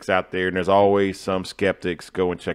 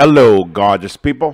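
booming, loud, fake British accent; 3 semitones higher, 10 dB louder than usual. Opening greeting, testing out an accent: put-on British accent. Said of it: "Was that a good British accent?".

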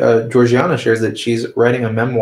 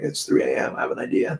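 put-on worn-out, exhausted, breathy near-whisper; 2 semitones lower, 8 dB quieter than usual. Describing their late-night voice memos, the speaker imitates their own very tired voice. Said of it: "my very tired voice going like".

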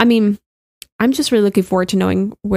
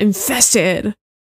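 dramatic, strong emphasis on the word infested. Reading out a name from a list, with strong emphasis on 'infested'. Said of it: "I have to kind of put some emphasis".

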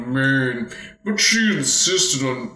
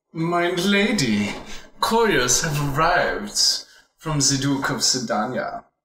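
rough attempted German accent, drifting toward Dutch. Voicing a maid who approaches her lady with news, in an attempted German accent. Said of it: "I don't know if that's really German".

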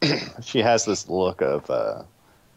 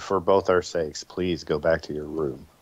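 slow, hushed half-whisper, pleading; 3 semitones lower, 4 dB quieter than usual. A game narrator voicing a character speaking to the player, half-whispering. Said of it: "she kind of whispers to you".

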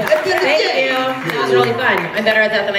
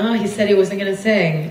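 normal talking voice

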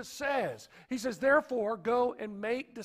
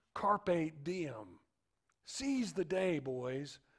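low, soft, eerie, gravelly hushed voice; 6 semitones lower, 5 dB quieter than usual. Speaker retells a scene to listeners, eerie gravelly Robin Williams voice. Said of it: "in an eerie, gravel-like voice".

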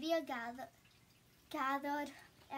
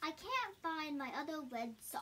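usual speaking voice

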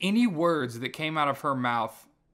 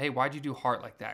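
ordinary talk, nothing marked

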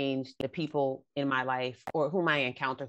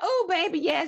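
put-on very high-pitched older woman voice; 6 dB louder than usual.

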